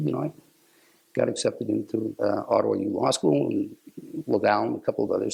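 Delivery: ordinary delivery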